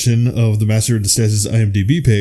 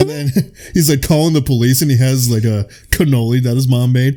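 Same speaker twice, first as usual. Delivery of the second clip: plain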